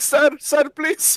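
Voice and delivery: very high, mock pleading squeal. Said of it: "Just kept screaming".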